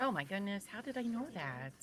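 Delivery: dry, snarky, mocking, sarcastic quip. Reacting to a court witness's expected answer: snarky, sarcastic. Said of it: "I'm snarky right now".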